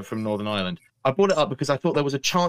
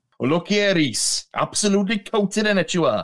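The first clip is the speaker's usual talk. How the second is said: put-on Welsh accent, pitched up; 7 semitones higher than usual. Joking about welsh lads pulling things out of the water: put-on welsh accent. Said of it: "That's Welsh, by the way. That's a Welsh accent".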